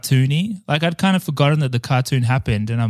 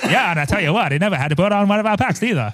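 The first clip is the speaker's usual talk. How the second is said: high, pitched-up, put-on old-timey voice; 6 semitones higher than usual. Retelling Dan Aykroyd's remark about the movie, in a Conan old-timey voice. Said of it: "Why did you do that voice?".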